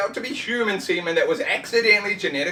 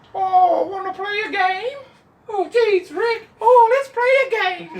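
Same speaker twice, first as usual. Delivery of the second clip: goofy, very high, slow, drawn-out silly comic voice; 11 semitones higher, 5 dB louder than usual. Imitating a revoiced character's new voice: silly comic voice. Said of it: "it's a silly voice now. It's like a comic voice".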